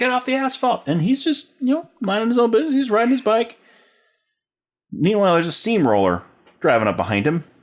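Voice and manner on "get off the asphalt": yelling, pitched higher. Retelling a worker yelling at a cyclist on fresh asphalt: imitating someone yelling. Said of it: "He's yelling out to him".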